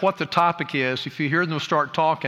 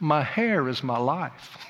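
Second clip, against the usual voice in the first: very slow, drawn-out Southern drawl. Retelling what a young relative used to say to the mirror: Southern accent. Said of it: "say in the most wonderful Southern accent".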